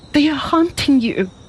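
very high-pitched alarmed cry. Reading a story, a woman hears a sudden footfall and cries to the man, cried out. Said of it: "she cried".

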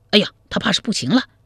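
startled, high, quick exclamation of alarm. A bystander sees a man collapse and cries out in alarm. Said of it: "一围观者惊叫一声".

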